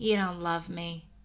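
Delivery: flat voice. Reading a story aloud, a character answers a confession: flat voice. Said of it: "Her voice was flat".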